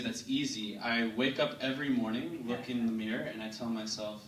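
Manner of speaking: ordinary talk, nothing marked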